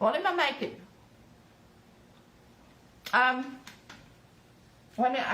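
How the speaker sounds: speaking with mouth full of food. Chatting with viewers while cooking, talking with mouth full. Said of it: "I've got my mouth full".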